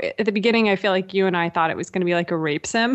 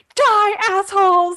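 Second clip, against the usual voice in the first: fierce, very high, loud, aggressive yell; 13 semitones higher, 6 dB louder than usual. Speaker recounts how she yells at enemies after getting a grenade launcher, retelling her yelling. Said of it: "she starts yelling at enemies like".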